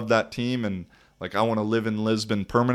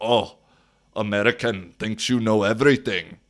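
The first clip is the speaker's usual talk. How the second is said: horrible, laid-on put-on Austrian accent. Retelling what an Austrian said to them after a dispute, in a horrible Austrian accent. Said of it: "That's a horrible Austrian accent".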